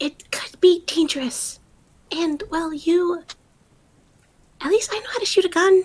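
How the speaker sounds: whispering. Playing a character who whispers again: whispering. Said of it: "she's gonna fucking whisper again".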